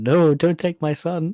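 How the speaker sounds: hammy over-acted pleading. Comparing two films, speaker imitates a village woman's bad acting, mock pleading. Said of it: "better acting than the poor Metabilis woman going".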